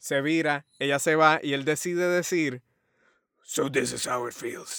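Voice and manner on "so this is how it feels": grim voice of a masked vigilante. Retelling a movie scene where the hero speaks: Batman voice. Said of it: "En voz de Batman".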